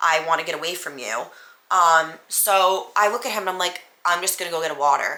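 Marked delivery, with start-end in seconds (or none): 4.0-5.2 deadpan, dead-level monotone with no inflection. Retelling the reply to someone screaming at the speaker, in a flat monotone. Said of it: "Like the most monotone voice".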